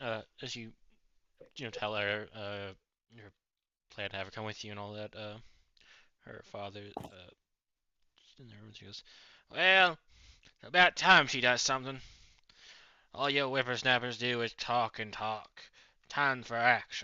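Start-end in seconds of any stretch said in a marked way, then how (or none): 9.5-17.0 put-on loud, high old man voice, grumpy and belted out. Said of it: "my old man voice".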